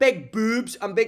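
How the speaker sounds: put-on loud, strong, aggressively forceful Scottish accent. Imitating a woman describing things to a class of boys, aggressively scottish accent. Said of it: "she was so fucking aggressively Scottish".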